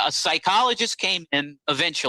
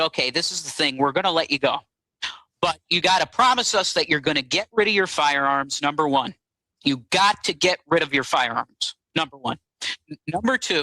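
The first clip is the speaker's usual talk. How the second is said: plain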